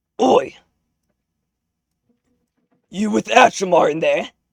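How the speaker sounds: loud orc voice. A game narrator voices an orc who spots a player peeking out, in an orc voice. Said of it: "he sees you peeking out and goes".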